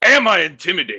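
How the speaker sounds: very loud menacing voice. Voicing a character slamming a fist on the table, acting intimidating. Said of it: "Rakim slams his fist on the table".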